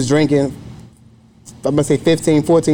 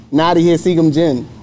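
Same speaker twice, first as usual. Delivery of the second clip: normal talking voice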